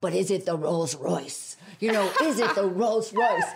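put-on speech in a Spanish accent. Quoting a chef friend asking about an oil: José Andrés Spanish accent. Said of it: "in his beautiful Spanish accent".

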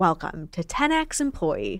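course presenter voice. Demonstrating the different voice used for the speaker's own course: online course voice. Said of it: "Like that's the course voice".

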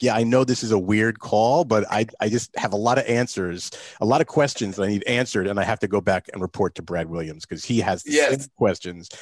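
usual speaking voice

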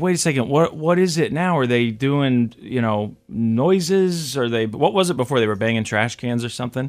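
normal talking voice

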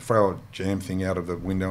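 normal talking voice

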